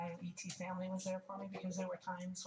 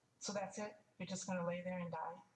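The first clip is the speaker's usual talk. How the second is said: ordinary delivery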